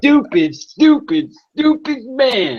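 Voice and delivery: weak put-on male voice, very high and dragged out. Trying a Ronan impression in a contest, bad Ronan impression. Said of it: "I wasn't very good".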